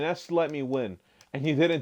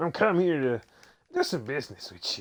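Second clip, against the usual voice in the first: put-on goblin creature voice, strained and squeezed out. Pretending to be a goblin come to do business, in a strained goblin voice. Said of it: "can make myself like I'm a goblin".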